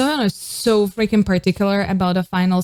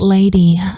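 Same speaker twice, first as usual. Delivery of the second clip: airy, breathy woman's voice, word breathed out; 7 dB louder than usual. Showing how Minnie delivered the line: breathy and soft like Minnie. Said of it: "with a little bit of an air, very soft".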